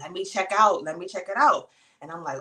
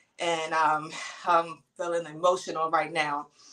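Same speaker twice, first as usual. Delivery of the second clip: ordinary delivery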